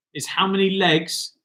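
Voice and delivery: ordinary talk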